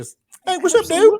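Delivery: very high, loud, playful, goofy dog voice. Explaining that talking to dogs is an excuse to use one: fun voice for talking to dogs. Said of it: "excuse to talk in a fun voice".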